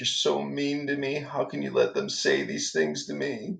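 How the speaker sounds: put-on weepy crying voice, high and tearful. Retelling a fight from yesterday, imitating her crying. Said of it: "She was crying".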